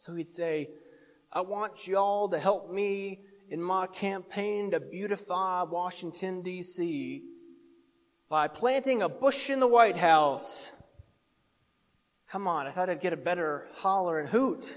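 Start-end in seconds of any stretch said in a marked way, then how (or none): 1.3-10.7 put-on slow, old-time Texas preacher drawl. Retelling what the college president would say in chapel, in a texas drawl. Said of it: "with that good old Texas drawl".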